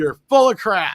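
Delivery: theatrical, loud, drawn-out delivery, full of relish. Repeating a viewer's comment on request: reading with gusto. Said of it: "Say it again".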